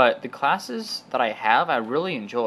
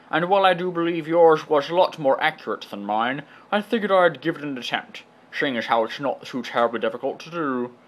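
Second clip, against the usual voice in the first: put-on Scottish accent, higher pitch; 4 semitones higher than usual. Answering another video-maker with an attempted Sean Connery accent. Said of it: "This is my attempt at a Sean Connery accent".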